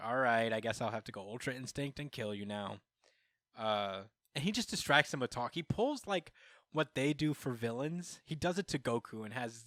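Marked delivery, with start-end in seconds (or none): none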